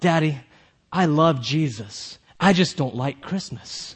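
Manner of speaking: play-acted fed-up, put-upon, exasperated voice. Retelling a three-year-old daughter's reply about Christmas: imitating exasperated Isabel. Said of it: "she gives me this little exasperated look and she says".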